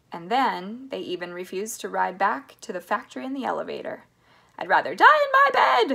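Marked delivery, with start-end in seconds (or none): 4.9-5.9 shrill, very high, loud shouted outburst. Narrator reading Grandma Josephine's line in the story, Grandma Josephine shouting. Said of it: "shouted Grandma Josephine".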